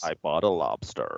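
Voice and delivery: low, creaky vocal fry. Asked what vocal fry means, demonstrating it: vocal fry. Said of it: "vocal fry is when you go".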